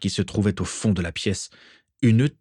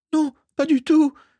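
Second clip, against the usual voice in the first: squeaky, very high, protesting tone; 4 dB louder than usual. Narrator reads Mimi answering a boy who accuses her of spying, squeaking. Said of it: "couina Mimi".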